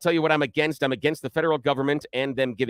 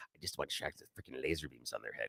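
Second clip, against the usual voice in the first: very low, very soft, hushed villain voice; 13 semitones lower, 19 dB quieter than usual. Addressing listeners on a show, delivering a quote in a Doctor Evil voice. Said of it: "you've got Doctor Evil's voice in there".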